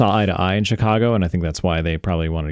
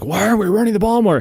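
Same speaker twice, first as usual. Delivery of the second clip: very high, fuming, angry shout; 13 semitones higher than usual. Retelling a coach's sideline complaint about running the ball: imitating Sean McDermott yelling. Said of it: "I see Sean McDermott yelling at them".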